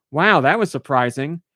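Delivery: ordinary delivery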